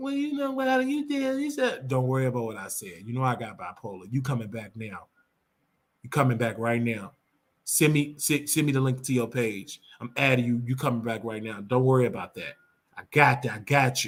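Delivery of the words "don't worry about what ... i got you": very low, deep, put-on man's voice. Retelling what a man said to the speaker, in a put-on deep voice. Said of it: "put on that deep voice".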